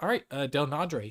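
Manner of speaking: ordinary talk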